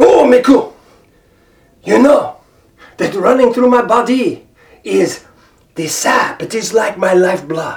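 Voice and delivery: poorly done, fake French-Canadian accent. Playing a talking tree speaking to Miku, bad fake French-Canadian accent. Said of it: "with my very bad, fake French-Canadian accent".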